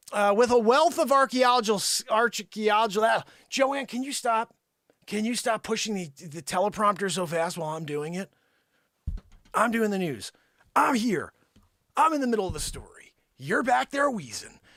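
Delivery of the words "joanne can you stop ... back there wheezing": half-yelled, mild, scolding yell. Scolding Joanne for pushing the teleprompter too fast, yelling at someone. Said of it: "you really just gotta yell at Joanne".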